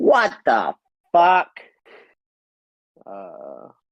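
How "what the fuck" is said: high, loud and annoying voice. Voicing an unseen character as players hear him: very annoying voice of Billy. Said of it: "the very annoying voice of Billy".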